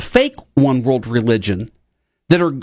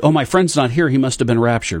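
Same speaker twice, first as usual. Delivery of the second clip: plain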